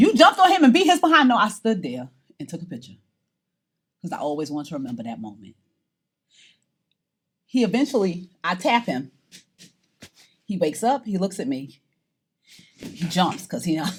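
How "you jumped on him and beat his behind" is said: mock outburst, blurted high and loud. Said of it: "Y'all are thinking".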